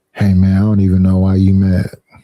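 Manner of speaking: put-on whispering. Acting out whispering to an angry partner: acting out a whisper. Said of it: "And whisper in their ear".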